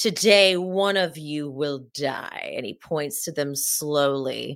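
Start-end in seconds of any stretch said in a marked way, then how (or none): 0.0-2.5 dramatic, big stage monologue delivery. Retelling Alan's monologue to the others: dramatic Alan voice. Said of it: "Alan's dramatic and amazing monologue".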